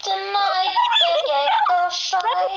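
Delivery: slow, wide-ranging mock grand proclamation.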